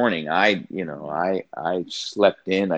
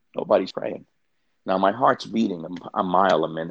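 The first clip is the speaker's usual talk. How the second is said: normal talking voice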